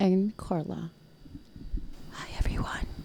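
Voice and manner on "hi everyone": soft ASMR-style whisper. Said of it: "Wow, A S M R".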